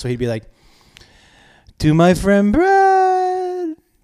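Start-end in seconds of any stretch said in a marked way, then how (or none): 1.8-3.7 put-on drunk French accent, higher and louder. Retelling a drunk guest's party speech: imitating a drunk French accent. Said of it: "Let me see if I can do French".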